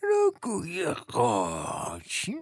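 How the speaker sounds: mocking, sneering, high-pitched voice. Narrating a story, voice a character repeating the dish's name: mocking, high-pitched voice. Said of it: "با لحنی تمسخرآمیز و صدای زیر".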